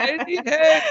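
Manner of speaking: vague, unsure hey-you. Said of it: "I don't feel like I go".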